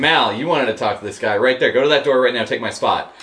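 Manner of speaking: normal talking voice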